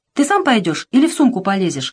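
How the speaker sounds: plain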